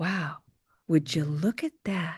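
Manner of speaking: breathy voice with a little spin. A phrase said often in practice, in a breathy Marilyn Monroe voice. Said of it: "you have to say it like that. You kind of have to spin it a little bit like Marilyn Monroe. Get it breathy".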